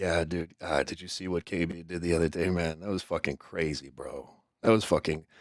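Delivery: soft half-whisper very close to the microphone. Retelling how Tabby Benedict talks on stream: imitating Tabby Benedict half-whispering. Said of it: "he's just whispering into the microphone".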